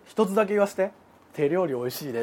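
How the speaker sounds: low, soft, cool-guy murmur.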